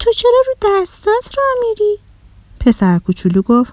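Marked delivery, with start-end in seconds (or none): 0.0-2.0 very high-pitched, amazed, astonished voice. A character asks a little boy walking on his hands why he does it, surprised. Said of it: "آدیشه با تعجب گفت".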